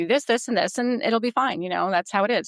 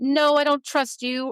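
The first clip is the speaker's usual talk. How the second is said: play-acted dripping, obvious, pitched-up sarcasm; 6 semitones higher than usual. The speaker retells answering a young pupil named Tori, retelling a sarcastic reply. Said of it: "And I said it sarcastically".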